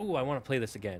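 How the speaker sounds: plain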